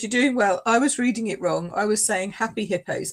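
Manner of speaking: normal talking voice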